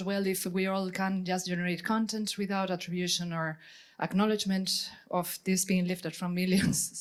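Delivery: normal talking voice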